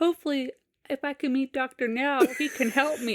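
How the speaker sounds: mock composed, unbothered, calm even voice. Retelling what a man said during his little speaking part, imitating a calm voice. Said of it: "in the calm voice".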